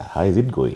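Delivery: ordinary talk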